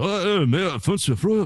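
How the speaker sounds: put-on very high, drawn-out, slow thick English accent. Retelling a friend's father coming down to breakfast: imitating a friend's father, thick accent. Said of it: "the impersonation that I do of his father".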